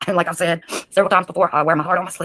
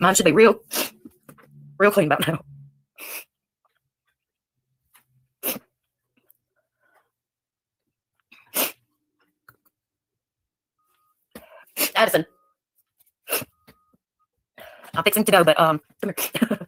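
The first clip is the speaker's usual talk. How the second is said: speaking through tears, crying while talking. Speaking to addison before leaving, crying while talking. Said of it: "Are you crying?".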